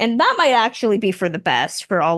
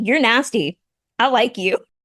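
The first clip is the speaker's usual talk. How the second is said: usual speaking voice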